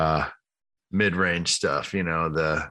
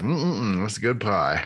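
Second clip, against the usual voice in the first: mock savoring food, higher pitch; 4 semitones higher than usual. Showing the sound of enjoying a piece of pie: imitating someone savoring pie. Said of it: "like when you eat a piece of pie".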